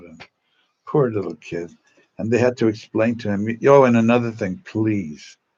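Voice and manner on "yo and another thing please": ordinary delivery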